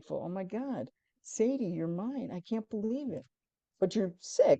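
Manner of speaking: tearful, crying voice, spoken through tears. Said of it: "I'm just crying".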